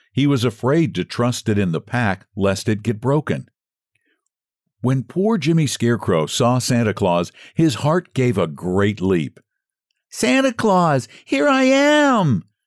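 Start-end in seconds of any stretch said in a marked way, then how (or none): 10.1-12.4 very high drawn-out calling out, am stretched. The scarecrow calls to someone passing who does not hear him: crying out. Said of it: "he cried out".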